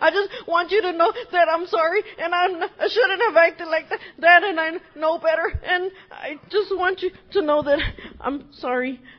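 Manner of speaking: put-on tearful voice, sobbing and sniffling. Retelling apologizing at the store register, retelling a tearful apology. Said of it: "I'm crying".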